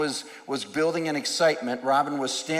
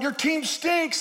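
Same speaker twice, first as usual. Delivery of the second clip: acted yelling, pitched way up; 13 semitones higher than usual. Retelling people yelling at the speaker over his team: retelling people yelling. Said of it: "they were yelling at me".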